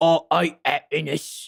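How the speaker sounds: put-on Cockney accent. Announcing a switch of accent to say a phrase, in a cockney accent. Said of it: "I'm gonna say it in a Cockney accent".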